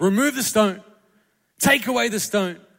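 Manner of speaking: put-on loud speaking. Speaker retells Jesus at the tomb; retelling a loud command. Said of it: "he says loudly, loudly".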